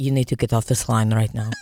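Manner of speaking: deep, low put-on Russian accent. Retelling what he told a caller he hadn't talked to in years, Russian accent. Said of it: "I immediately switched into a Russian accent".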